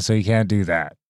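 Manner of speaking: ordinary talk, nothing marked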